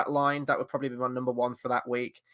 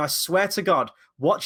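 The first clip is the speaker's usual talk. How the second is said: ordinary talk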